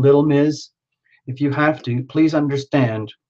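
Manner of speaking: ordinary talk, nothing marked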